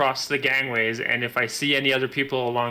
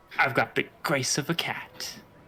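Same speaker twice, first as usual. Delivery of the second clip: hushed, private whisper, as to oneself; 3 dB quieter than usual. Casting a spell on one's own character, whispering to oneself. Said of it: "I'm just going to whisper to myself".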